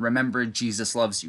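ordinary talk

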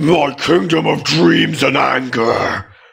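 furious roaring creature voice, rough rumble, very loud. Reading a story aloud, voicing a creature: furious rumble. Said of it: "The creature rumbles furiously".

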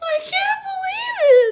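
very high-pitched, gasped-out delivery. Narrator reading a story, giving Arnie's reply to the baker: gasping. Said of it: "Arnie gasped".

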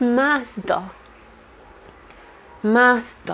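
pitiful, pleading creature voice. Imitating a word heard during a reading: pitiful Smeagol voice. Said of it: "It sounded like how Smeagol would say it, kind of in a pitiful way".

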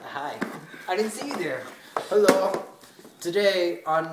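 slow, laid-back on-air DJ host patter. Acting out a game prompt after being told to: acting like a dj. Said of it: "Just act like a D J".

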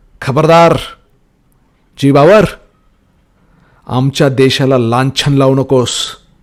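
loud, bellowing, roaring warrior voice. A narrator reads a wrestler confronting his opponent at the ring, roaring loudly. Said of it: "मोठ्या आवाजात गरजला".

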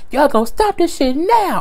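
very high put-on woman voice. Act out a man mad at two people for going back and forth, in a battered woman voice. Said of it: "He put on his goddamn battered woman voice".

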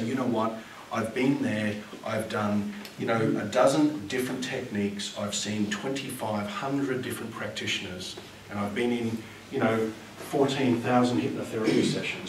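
ordinary talk

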